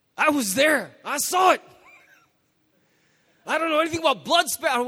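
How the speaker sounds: loud, high-pitched ranting voice. Mimicking someone ranting on YouTube about what they saw: YouTube eyewitness accent. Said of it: "I'm not even sure why I'm using that accent".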